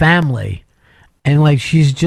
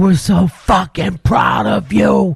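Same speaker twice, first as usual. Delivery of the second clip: put-on tearful crying yell, higher pitch; 3 semitones higher than usual. Retelling how the brothers cheered her, imitating crying, yelling brothers. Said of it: "with her brothers crying and yelling at her".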